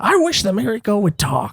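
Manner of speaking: high, swooping, wide-ranging animated cartoon sidekick voice. Answering a request to do a character's voice: Usopp voice. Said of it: "do your Usopp voice".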